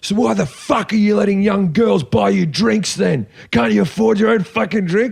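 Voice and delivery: aggressive, angry tone. Retelling a man who confronted him for being a comedian, imitating an angry man. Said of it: "He's angry".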